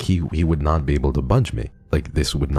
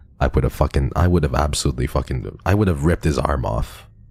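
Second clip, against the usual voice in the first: plain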